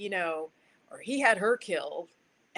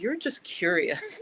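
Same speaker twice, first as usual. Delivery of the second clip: put-on scornful, disdainful, dismissive tone. Retelling what a best buddy would say to her: imitating a disdainful tone. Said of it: "he'd say to me disdainfully".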